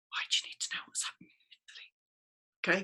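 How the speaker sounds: hushed, breathy, half-secret whisper. Arguing both sides of a question, the speaker drops to an odd whisper and notes it. Whispering. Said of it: "I don't know why I'm whispering".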